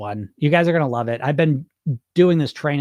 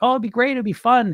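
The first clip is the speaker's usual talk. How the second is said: put-on very high, naive little-kid voice; 9 semitones higher than usual. Acting out the inner child voice that wants to lose weight: put-on childlike voice. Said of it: "this child who's very childlike".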